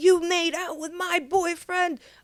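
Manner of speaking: put-on, very high, shrill, furious screaming. Retelling a man screaming at the speaker to leave his house, imitating someone screaming. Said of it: "is screaming at me to get the F out".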